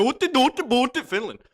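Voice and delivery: put-on Finnish accent. Guessing countries in a game, joking: put-on finnish accent. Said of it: "That was my Finlandish-nish accent".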